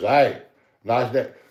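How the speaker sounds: mock tipsy, toasted, drunken, friendly voice. Acting out a hypothetical scene: imitating drunk Scott. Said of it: "toasty, intoxicated drunk, is standing beside your brother and goes".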